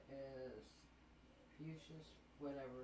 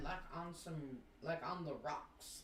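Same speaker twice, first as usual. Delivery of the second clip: usual speaking voice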